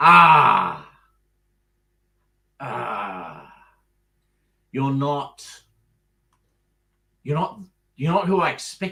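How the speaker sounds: loud, slow, deliberate talking-wall character voice. Voicing a mouth on the wall that greets arriving players: voice of a talking mouth in the wall. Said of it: "the voice that comes out of the mouth".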